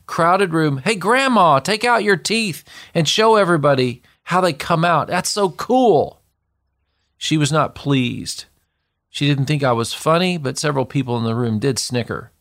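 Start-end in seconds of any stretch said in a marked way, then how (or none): 0.7-6.2 very loud shouted voice. Retelling what they said to grandmother as a kid, before a crowded room: very loud call. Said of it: "in a very loud voice".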